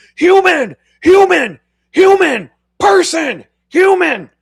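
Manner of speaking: shrill, high, loud repeated yelling. Advising how to reach a human on a phone menu, yelling at a phone system. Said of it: "just start yelling".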